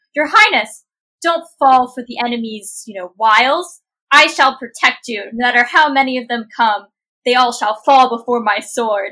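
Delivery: very loud, booming, commanding knight-like voice. Seeing someone grab her Highness's hand, a swordswoman steps in: Aurelia's most commanding voice. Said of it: "best, most commanding voice".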